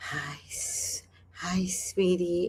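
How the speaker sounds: put-on drawn-out, very slow creepy old-man voice. Imitating the creepy old guy who stops you on the street: imitating a creepy old man. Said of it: "he's like this".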